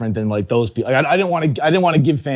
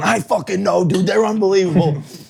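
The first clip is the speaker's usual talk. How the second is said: mock fired-up, hyped excitement, pitched up; 8 semitones higher than usual. Retelling eating in the car with him, acting out his own jacked-up excitement. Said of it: "I'm I'm getting jacked up in the passenger seat too".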